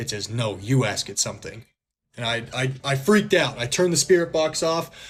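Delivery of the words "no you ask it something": put-on sassy tone, lower pitch. Retelling what a spirit box said: imitating a sassy voice. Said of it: "in, like, a sassy voice".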